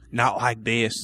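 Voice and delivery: put-on southern accent. Quoting Switch's line from the movie: Switch's southern accent. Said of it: "with her southern accent".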